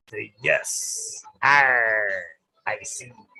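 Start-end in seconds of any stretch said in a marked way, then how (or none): 1.4-3.1 loud put-on stage-pirate voice. Asked to say yes, answer in your best pirate voice. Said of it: "in my best pirate voice".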